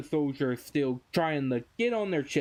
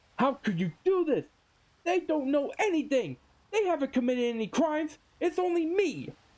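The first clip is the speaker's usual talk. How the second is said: shrill, high-pitched, furious angry yell; 11 semitones higher than usual. Recapping a scene where Vegapunk yells at Saturn, imitating Vegapunk's angry yell. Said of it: "Vegapunk is mad at this point as he yells out".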